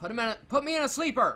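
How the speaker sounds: high-pitched, fast, loud yelling. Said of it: "then he yells".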